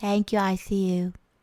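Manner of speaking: put-on, mock saucy podcaster-style voice. Thanking podcast listeners back, put-on saucy podcasting voice. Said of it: "I said that in my best podcasting voice".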